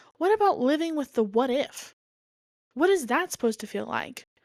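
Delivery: sermonizing voice. Explaining what it's like to live without having found someone: preachy. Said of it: "I just went real preachy".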